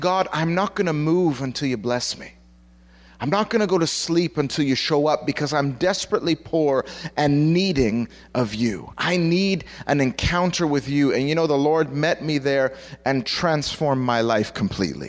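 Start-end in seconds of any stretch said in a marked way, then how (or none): none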